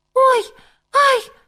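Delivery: very high, loud, squeaky yelp. A hare reacts as the five magic words take effect, squeaking. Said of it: "писнув заєць".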